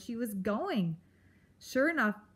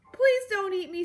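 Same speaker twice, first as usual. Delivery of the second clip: high, loud, desperate imploring plea; 10 semitones higher, 6 dB louder than usual. Poppy kneels before Aerith with her head bowed, imploring. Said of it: "she implored".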